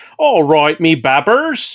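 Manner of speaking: Bristol accent impression. Quoting a Bristol man's catchphrase, doing a Bristolian Dave impression. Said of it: "I like the way you do the English accent".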